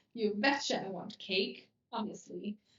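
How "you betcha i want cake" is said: ordinary talk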